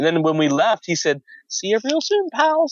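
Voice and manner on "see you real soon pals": high-pitched cartoon-style voice. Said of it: "in the voice".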